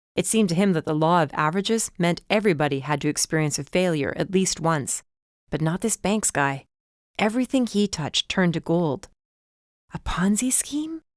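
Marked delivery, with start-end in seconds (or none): 10.0-11.0 hushed, breathless whisper, pitched up. Reading a first-person story aloud, voicing the narrator's line: breathless whisper. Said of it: "I whispered, breathless".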